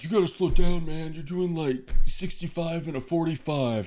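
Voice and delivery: high-pitched, shouting cop-style yell. Retelling how a cop yelled at the speeding driver: imitating a cop yelling. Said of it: "starts yelling at me".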